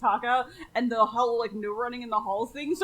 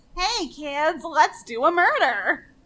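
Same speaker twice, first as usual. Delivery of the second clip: high, loud, very slow, each word stretched; 5 semitones higher, 6 dB louder than usual. Answering a request to recall the character's voice: Big Bird voice. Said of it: "I can't call to mind what Big Bird sounds like".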